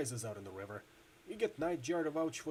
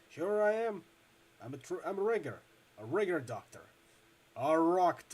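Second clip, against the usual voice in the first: put-on loud, slow, loose Midwestern accent, words running together; 2 semitones higher, 5 dB louder than usual. A narrator voices a character answering whether he is a doctor, loose Midwestern accent. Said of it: "his words piling together in a loose Midwestern accent".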